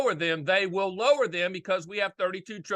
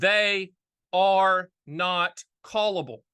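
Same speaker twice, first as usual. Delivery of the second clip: each word drawn out very slowly, deliberate. Explaining a key point to listeners, very slow. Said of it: "I'm going to say this very slow".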